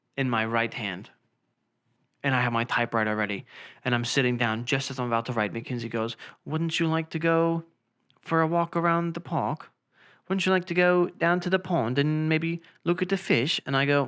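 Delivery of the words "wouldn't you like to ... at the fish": put-on British accent, held all through. Retelling what Mackenzie said to the speaker, imitating Mackenzie's British accent. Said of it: "stop with your British accent".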